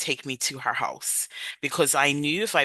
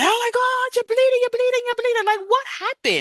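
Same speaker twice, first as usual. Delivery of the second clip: very high, frantic, rushed, panicked screaming; 5 dB louder than usual. Retelling how her mom reacted on seeing blood: imitating her mom screaming. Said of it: "she started screaming".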